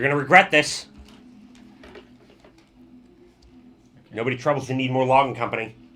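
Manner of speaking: loud, small, tiny goblin character voice. Storyteller voicing a goblin inside a mech, speaking to the party: tiny goblin voice. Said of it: "you hear a tiny goblin voice from inside".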